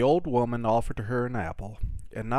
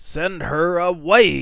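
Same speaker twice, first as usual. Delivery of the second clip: very loud, high, unsympathetic, angry shouting; 7 semitones higher, 11 dB louder than usual. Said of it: "he yelled".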